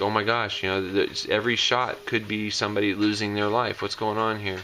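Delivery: ordinary talk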